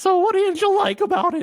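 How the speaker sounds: very high, squeaky, off-sounding voice. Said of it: "make it your full-time podcast voice".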